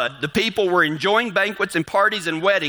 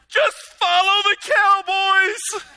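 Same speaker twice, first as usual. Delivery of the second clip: play-acted, very high-pitched, exasperated, flabbergasted blurt; 13 semitones higher than usual. Retelling a man who kept calling Martha in a hallway, acting out flabbergasted man. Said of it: "finally he gets flabbergasted and he's like".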